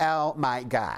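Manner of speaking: put-on LA Valley Girl accent. Describing the L.A. accents heard while living in the States, in a Valley Girl voice. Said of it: "and also the Valley Girl".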